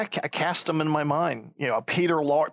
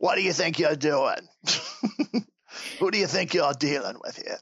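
tough, heavy New York gangster accent. Talking about their accent attempts, the speaker tries a new york mafia heavy accent. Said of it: "my attempts at a New York accent, like if I'm trying to do a mafia heavy".

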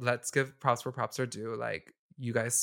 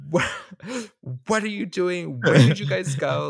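mock very loud, shrill diva outburst; 6 semitones higher, 8 dB louder than usual. Storming up to Zach who had left, retelling own words: acting out being a diva. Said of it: "me being a diva".

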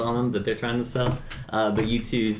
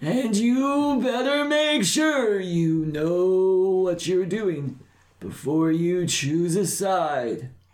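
slow, high, close put-on old man voice; 8 semitones higher than usual. A cloaked stranger leans in close to a party member, in an old man voice. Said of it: "a very tall, scrawny old man with a very large brown cloak, / a very tall, scrawny old man with a very large brown cloak, / and there's like an old man just kind of peering over [name]'s shoulder. / a".

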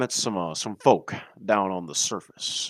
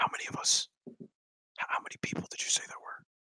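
very quiet, barely-there whisper. Role-playing a character who still has to whisper, whispering. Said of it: "I still got to whisper".

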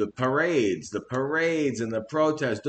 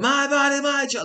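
mock shrill, unhinged, very high lunatic scream; 13 semitones higher, 3 dB louder than usual. Retelling a woman in a video screaming at someone, imitating someone screaming like a lunatic. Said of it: "Just screaming at like a lunatic".

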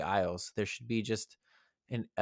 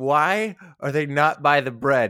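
acted-out meltdown, losing it, louder; 5 semitones higher, 11 dB louder than usual. Retelling a grocery-store lady flagging down a worker, mimicking her losing it. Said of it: "this lady was losing it".

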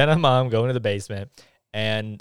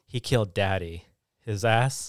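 ordinary talk, nothing marked

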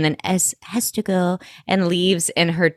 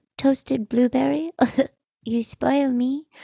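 put-on baby voice, higher and quieter; 7 semitones higher, 4 dB quieter than usual. Recapping a TV episode, quoting Lily's line in Lily's baby voice. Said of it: "the baby voice was out of control".

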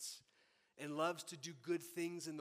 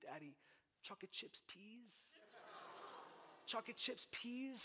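put-on whispered, sweet little child voice; 7 semitones higher, 6 dB quieter than usual. Retelling the daughter asking for chocolate chips: imitating a toddler asking sweetly. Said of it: "she'll look at me with this, like, sweet little posture".

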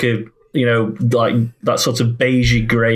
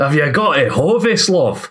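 put-on Yorkshire accent, much higher pitch; 4 semitones higher than usual. Quoting a man again, in a put-on Yorkshire accent. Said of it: "You went more Yorkshire".

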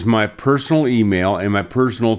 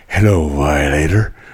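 put-on tough-guy voice, pitched lower; 6 semitones lower than usual. Showing how a tough character was voiced: young Clint Eastwood voice. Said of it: "just to a young Clint Eastwood".

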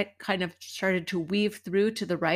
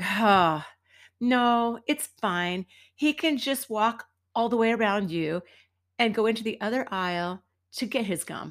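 normal talking voice

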